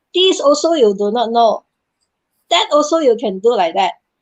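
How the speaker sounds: fierce put-on tone. Retelling how people gave harsh feedback when young: imitating a fierce tone. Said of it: "especially when they say it in a very fierce tone".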